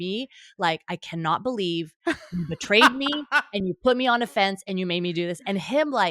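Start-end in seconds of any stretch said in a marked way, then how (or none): 0.9-5.4 fed-up, frustrated, accusing tone. Retelling being stuck on a fence with him, acting out own past frustration. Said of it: "we were both equally frustrated".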